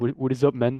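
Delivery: put-on French accent. Retelling a greeting from someone met for a photo, imitating a French accent. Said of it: "the French accent is is crazy".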